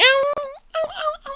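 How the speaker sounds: put-on very high, drawn-out, slow little-girl whimper. Retelling how a woman sounded, imitating a little girl's cry. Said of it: "She literally cry like a little girl".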